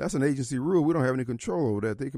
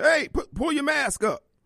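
mock very high, shrill, loud scream; 13 semitones higher, 5 dB louder than usual. Retelling what the metal detector worker said: imitating a woman screaming. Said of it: "she screams at me".

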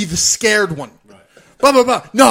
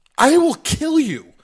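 acted, mocking, pitched-up, slow, laughing delivery; 5 semitones higher than usual. Speaker recounts a small guy talking trash to him, retelling laughing at him. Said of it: "I'm laughing at him".

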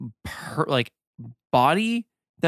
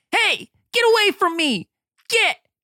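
very high, loud squirrely squealing voice. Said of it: "kind of squirrely voice".

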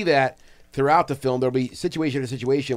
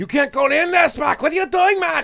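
put-on Mexican-ish accent slipping into Scottish; 4 dB louder than usual. Acting out a movie scene with Spock in the chamber, impression in a Mexican, almost Scottish accent. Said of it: "That's a great impression".

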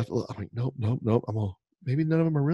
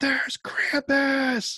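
put-on, very high, scared and excited shriek. Retelling seeing krampus in the dark, re-enacting their own scream. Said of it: "I start screaming".

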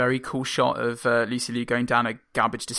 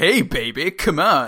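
put-on, very 90s flirtatious voice, louder; 2 semitones higher, 5 dB louder than usual. Describing a movie scene, imitate a guy pushing himself on a woman, very 90s. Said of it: "in a very 90s way".

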